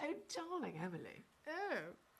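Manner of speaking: high, soft, ladylike fashionable-lady voice. Showing how your nan, a former swimsuit model, talks, in Nan Fox's way of talking. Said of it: "that's how she talks".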